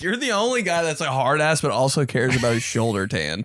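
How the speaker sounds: usual speaking voice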